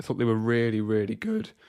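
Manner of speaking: voice cracking and breaking. Speaker reviewing Spurs versus Southampton praises the two midfielders, voice cracking. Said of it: "voice crack".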